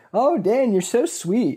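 put-on sugary, all-nice, high, slow sweet-talking voice. Acting out a date who is being all nice: acting all nice. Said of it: "being all nice and like".

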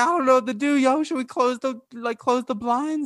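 put-on frightened voice. Retelling a video call as trick-or-treaters swarmed her lawn, imitating her scared. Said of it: "she got all scared".

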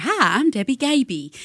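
put-on Southern spokeswoman accent. Retelling a local commercial woman's line: imitating a Southern commercial woman. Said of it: "very Southern".

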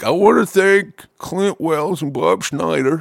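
put-on high, elderly old-man voice. Imitating a friend thanking two people at the Grammys: imitating Zach as an elderly man. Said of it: "This is the way he sounds".

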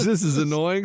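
ordinary talk, nothing marked

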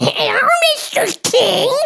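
tiny, very high, loud gargoyle squeak. Guessing aloud how a guy's little gargoyle sounded: little gargoyle voice. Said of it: "this was the gargoyle's voice".

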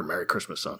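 tiny, barely-there, very quiet whisper. Retelling how a special wrapped up its plot: imitating a tiny whisper. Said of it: "with a tiny little whisper".

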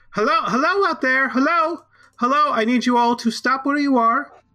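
very high, loud yell, called out. Narrating a scene, the speaker voices a woman calling to an approaching group: yelling out. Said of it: "you hear her yell out".

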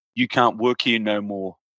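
serious put-on voice. Retelling a scene where Freddie fires Ray: imitating Freddie being serious. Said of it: "he's all serious and he, and he says".

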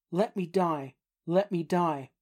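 ordinary talk

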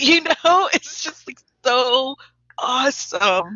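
high, awestruck, reverent tone. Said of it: "make us feel how wonderful those socks are".

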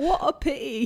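attempted British accent. Urged by the other speaker to try it, the speaker attempts a british accent. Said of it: "I want to hear your British accent".

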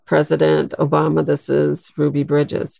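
normal talking voice

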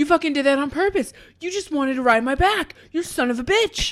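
worked-up, wound-tight rant. Recapping a game scene after Axel gets tased, acting out Marty's wound-up rant. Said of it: "he's just so like wound up".

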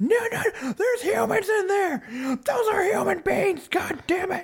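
commentator call with voice way up. Imitating a commentator's call as wrestlers fall off a ramp: Jim Ross call. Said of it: "The call was awesome from Jim Ross".

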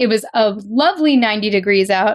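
ordinary delivery

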